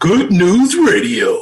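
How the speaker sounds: action movie-trailer announcer voice. Announcing the app's name as a joke: action movie trailer voice. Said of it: "The Action Man voice".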